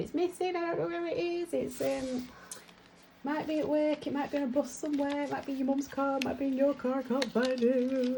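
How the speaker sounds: high, panicked, rambling blurt. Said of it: "But he'd been panicking, going".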